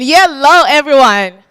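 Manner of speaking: high energy. A seminar host repeats the greeting to the audience, asking for more energy, energetic greeting. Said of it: "I'm expecting a bit more energy than that".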